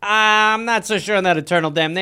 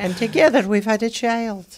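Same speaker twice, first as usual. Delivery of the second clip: put-on Scottish accent in a woman's voice; 3 semitones higher than usual. Retelling family history, voicing the scottish immigrant mother: imitating a scottish lady. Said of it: "I'm doing an impression of her".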